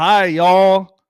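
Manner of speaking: put-on country accent. A livestream host reading a viewer's comment aloud, in a put-on country accent. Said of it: "with that country accent".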